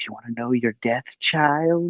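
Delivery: eerie crone voice. Retelling a scene where a hooded woman speaks: creepy old lady voice.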